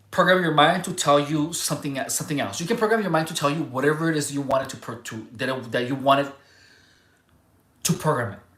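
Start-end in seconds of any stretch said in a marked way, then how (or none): none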